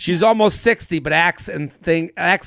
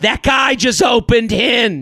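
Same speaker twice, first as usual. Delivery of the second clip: put-on loud drunken stage whisper, pitched up; 5 semitones higher than usual. Retelling a woman at a bar getting coached on a breakup text, imitating a loud drunken whisper. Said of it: "She whispers drunkenly, so loudly".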